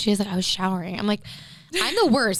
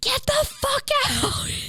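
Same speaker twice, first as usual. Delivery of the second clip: put-on scream, very high pitched and drawn out. Retelling screaming at an intruder at the window: imitating someone screaming. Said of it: "I scream".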